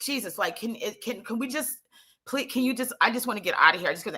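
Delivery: anxious, nervous pleading tone, halting, tripping over words. Retelling talking to police officers while shaking: imitating own nervous pleading. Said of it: "I'm so nervous that they're out of the car".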